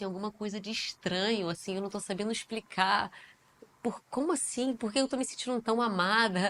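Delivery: ordinary talk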